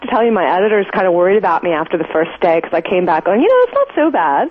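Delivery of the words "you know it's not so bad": slightly excited, higher pitched. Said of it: "you sound a little excited".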